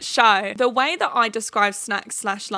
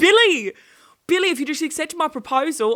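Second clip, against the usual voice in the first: put-on pitched-up Australian accent; 6 semitones higher, 3 dB louder than usual. Recapping a TV show, voicing her Australian ex-boyfriend in Australian Brad voice. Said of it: "He goes".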